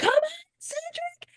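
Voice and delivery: very high-pitched, shrill, screamed cheering. Retelling a moment from the episode, imitating Say screaming. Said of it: "screaming, like".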